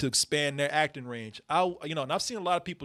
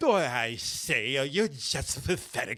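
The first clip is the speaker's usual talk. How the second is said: very slow, silly put-on British butler voice; 4 dB quieter than usual. Mocking an actor's accent, imitating an american doing a british butler. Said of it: "He sound like American doing the Brit Butler".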